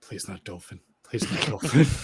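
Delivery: repeated private aside. Voicing a character who hopes a messenger is not chosen: muttering under her breath. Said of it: "Lyria's just under her breath".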